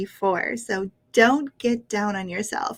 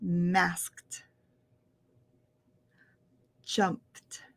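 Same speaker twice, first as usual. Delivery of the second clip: slightly slower, lower and quieter; 4 semitones lower, 7 dB quieter than usual. Repeating the practice words for viewers, a little slower. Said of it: "a little slower".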